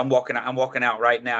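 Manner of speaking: ordinary delivery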